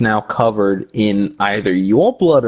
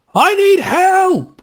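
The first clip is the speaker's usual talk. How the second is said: very high-pitched yell; 3 dB louder than usual. Voicing a startled man calling to a player: NPC shouting for help. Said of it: "he looks in your direction and shouts".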